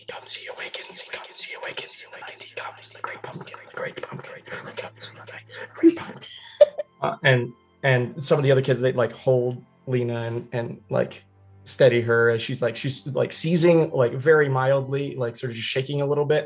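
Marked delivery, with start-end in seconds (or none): 0.0-7.5 quiet put-on whisper. Retelling what a girl said as her eyes rolled back: retelling a whisper. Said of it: "she starts whispering like really like it".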